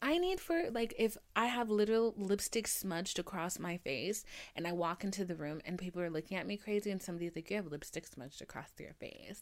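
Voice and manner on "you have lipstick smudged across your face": put-on, catty, bitchy tone with an edge. Imagining someone pointing out a lipstick smudge: imitating a bitchy remark. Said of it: "in a bitchy way".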